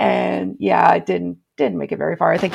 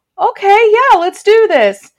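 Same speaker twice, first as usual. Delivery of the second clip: high, loud eager voice. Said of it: "And I was like".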